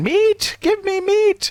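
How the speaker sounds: very high, slow cackling voice with words dragged out. The narrator voices the monster hanging from the ceiling: cackling Nothic voice. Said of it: "It cackles as it notices your comprehension and de- declares again".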